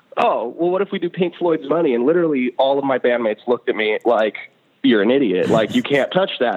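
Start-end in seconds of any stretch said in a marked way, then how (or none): 0.2-2.0 tongue-in-cheek, half-joking, acted, pitched much higher. Retelling a suggestion made to bandmates in the car, retelling a tongue-in-cheek remark. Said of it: "almost kind of tongue in cheek".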